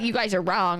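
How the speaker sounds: usual speaking voice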